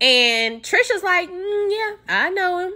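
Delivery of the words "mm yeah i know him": put-on, very high, slow, drawn-out, awkward voice. Retelling a woman's reply at a party: imitating an awkward reply. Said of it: "Looking all awkward".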